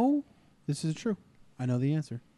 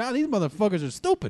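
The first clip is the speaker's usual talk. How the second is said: put-on German accent, played for laughs, raised pitch; 6 semitones higher than usual. Retelling a story of sabotaged weapons, speaker voices the Germans in a mock German accent. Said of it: "How'd you like my Negro German accent?".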